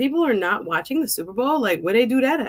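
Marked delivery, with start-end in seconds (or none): none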